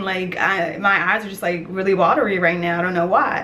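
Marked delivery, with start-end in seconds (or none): none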